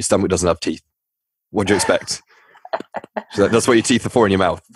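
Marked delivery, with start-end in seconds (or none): 0.0-2.2 put-on deadpan delivery. Retelling what a digestion specialist told you, imitating a deadpan delivery. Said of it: "looked at me just like deadpan and was just like".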